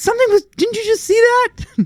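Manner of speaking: high, alarmed call-out. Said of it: "And I go".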